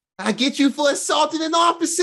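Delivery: Italian New York gangster voice. Friends praising a show's accents, quoting a line in Italian mobster New York accent. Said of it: "little Italian mobster New York accents".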